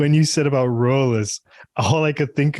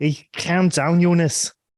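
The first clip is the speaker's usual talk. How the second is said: put-on Scouse Liverpool accent, higher pitch; 5 semitones higher than usual. Repeating the line when asked to say it again, scouse accent. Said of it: "Say it again".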